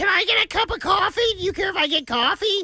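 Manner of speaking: very high-pitched cartoon witch voice. Imitating his girlfriend asking for coffee: Wicked Witch of the West voice. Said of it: "[name]'s voice for his girlfriend sounds like the Wicked Witch of the West".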